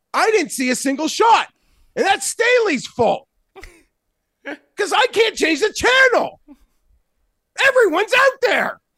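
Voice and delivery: very high-pitched yelling. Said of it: "Sorry for yelling".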